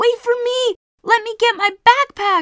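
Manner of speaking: shrill, very high, loud screaming. As the family hurries away from the stones, Mum begs them to wait, screaming. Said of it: "Mum screamed".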